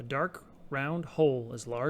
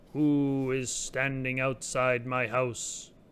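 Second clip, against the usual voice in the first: deep, round, resonant voice like an organ note; 2 semitones lower, 4 dB louder than usual. Reading a story: a voice from a hollow trunk questions visitors outside, deep round voice. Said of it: "a deep round voice, a voice like an organ tone".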